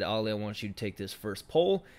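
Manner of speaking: ordinary talk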